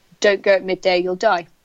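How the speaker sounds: ordinary talk, nothing marked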